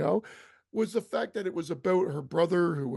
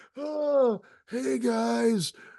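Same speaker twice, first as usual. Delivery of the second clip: mocking imitation of bad acting, higher; 6 semitones higher than usual. Retelling a scene from a horror movie, imitating a character's bad acting. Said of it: "the acting is fucking".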